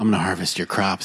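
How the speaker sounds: mock sensual, seductive tone. Retelling offering to harvest other players' crops in a game, mock sensual voice. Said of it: "you're saying this in a sensual".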